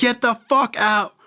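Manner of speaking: mock screaming outburst, very high-pitched. Retelling how a friend screamed at him to leave the car: imitating someone screaming. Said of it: "And he's screaming".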